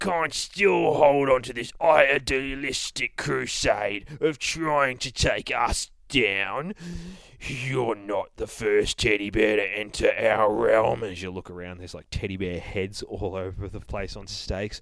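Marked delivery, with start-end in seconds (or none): 0.0-11.0 slow, sneering, scornful Cockney boogeyman voice. Reading the boogeyman speaking to a teddy bear, as the Cockney from The Mighty Boosh. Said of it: "says the fucking boogeyman. ... maybe we'll read him as the Cockney from The Mighty Boosh".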